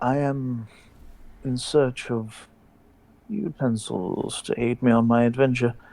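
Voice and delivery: secretive conspiratorial manner. Leaning in to ask a shopkeeper for utensils, conspiratorial tone. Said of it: "lean in conspiratorially and say".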